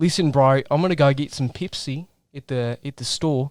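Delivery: casual, put-on Australian accent. Answering a request to do australian: australian accent. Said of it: "if I was from Australia or something".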